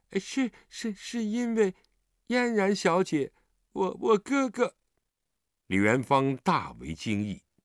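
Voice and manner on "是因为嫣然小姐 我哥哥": stammering, much higher and slower. Startled by a sharp question, answering the questioner, stammering. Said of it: "结结巴巴地说".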